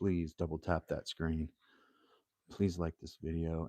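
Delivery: very calm, serene, soothing voice. Asking viewers for something through a new microphone, in a very calm voice. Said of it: "with my most calm voice".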